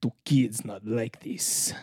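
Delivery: slow, soft, put-on Russian accent. Telling another speaker his accent sounded russian, repeating his line imitating a russian accent. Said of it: "But you sounded Russian".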